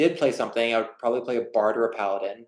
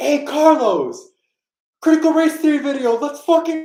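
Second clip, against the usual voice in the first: screaming, higher and louder; 8 dB louder than usual. Retelling how a guy on a bike yelled at the speaker: imitating a guy screaming. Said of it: "just screamed out".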